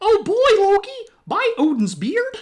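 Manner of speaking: very high, loud, swooping pitch. The speaker tries a voice they admit they don't do well: Mickey Mouse impression. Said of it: "I don't do a very good Mickey Mouse impersonation".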